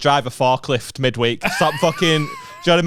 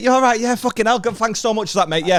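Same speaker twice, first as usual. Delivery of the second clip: mock chirpy, overly cheerful voice, higher; 8 semitones higher than usual. Retelling how customers greet a worker on saturday morning: imitating an overly cheerful customer. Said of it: "Your positivity has ruined my day".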